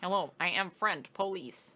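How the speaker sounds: robotic voice. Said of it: "is this robot?".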